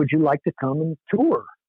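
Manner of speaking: imitated, put-on German accent. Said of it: "this German-sounding guy".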